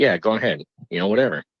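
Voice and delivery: ordinary talk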